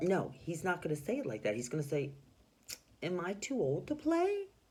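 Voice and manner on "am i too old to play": unsure, hesitant, slow and pitched up. Reading the story aloud, voicing Mister Putter's line: uncertain, as Mister Putter. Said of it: "Like he's uncertain".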